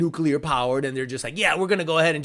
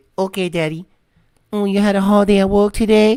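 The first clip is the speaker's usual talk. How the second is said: fake Chinese accent, higher and louder; 4 semitones higher, 7 dB louder than usual. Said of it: "and it gives you the accent".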